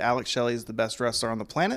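ordinary delivery

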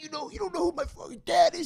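put-on very high, self-important screaming outburst. Retelling a kid in a jail cell screaming at the cops: retelling a scream. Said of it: "He's screaming".

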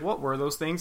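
plain

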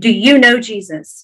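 plain

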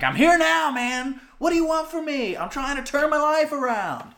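very high half-shouted outburst. Retelling walking late into class in a dream: imitating his own yell. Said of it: "You yelled that?".

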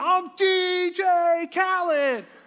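shrill, very high put-on child's scream. Parent retelling how their child kept screaming up and down the aisle, retelling a scream. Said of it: "he keeps up and down the aisle screaming".

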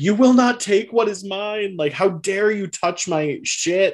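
acted, very high-pitched freaking-out outburst. Retelling a dinner scene where Pierre freaks out: Pierre freaking out. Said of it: "Pierre freaks out and is like".

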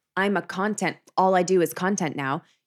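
ordinary delivery

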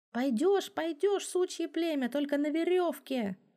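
high, shaking, trembling yell. A guard yells at the stranger who offered to come along, with a trembling voice. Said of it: "заорал тот, у которого дрожал голос".

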